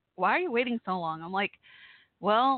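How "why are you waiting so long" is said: ordinary talk, nothing marked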